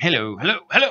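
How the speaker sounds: fake British accent, pitched very high. Retelling a cartoon joke about an actor warming up: put-on British accent. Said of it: "I gotta do a British guy today".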